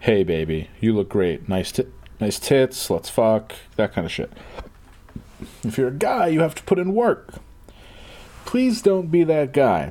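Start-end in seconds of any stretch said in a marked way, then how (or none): none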